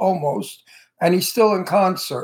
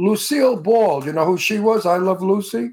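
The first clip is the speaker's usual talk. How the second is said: ordinary talk, nothing marked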